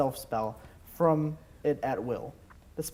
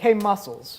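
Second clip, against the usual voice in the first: teasing, mocking, sarcastic voice, pitched up; 5 semitones higher, 3 dB louder than usual. Voicing a character who greets a player character teasingly: sarcastic. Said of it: "she was kinda being sarcastic".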